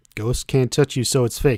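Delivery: ordinary delivery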